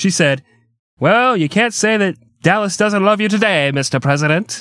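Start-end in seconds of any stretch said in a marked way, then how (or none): 1.0-4.6 put-on pitched-up old-fashioned voice. Retelling her remark to the President: old-timey Nellie Connolly voice. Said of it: "She went... old-timey voice".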